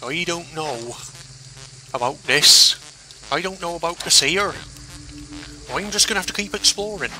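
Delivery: high, put-on broad West Country accent.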